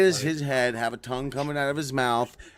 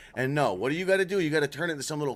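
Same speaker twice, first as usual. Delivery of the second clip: plain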